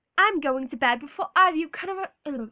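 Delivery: loud, put-on British accent, movie-style delivery. Quoting a line from Harry Potter for the listener, in a British accent. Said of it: "show you British accent".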